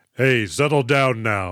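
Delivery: very deep, slow, dropped-down put-on voice. Discussing a film, imitating how one soldier character talks: a very deep voice. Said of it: "If that is how deep that dude's voice is".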